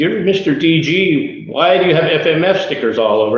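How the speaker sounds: high, laughing, acted teasing voice. Retelling how a racer teased him at the starting gate: imitating someone laughing while teasing. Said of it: "he's laughing and he's giving me so much crap".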